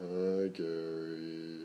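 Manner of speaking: put-on mopey, soft fake-sad voice, drawn out. Pretending to get sad right after being told not to be happy: fake sad voice. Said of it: "let me get sad real quick".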